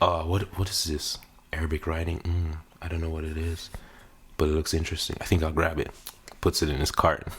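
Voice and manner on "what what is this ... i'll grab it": fake, mock-sultry seductive voice. Retelling a shopper's thoughts in a spice aisle, in a put-on sexy voice. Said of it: "Let me use my sexy voice".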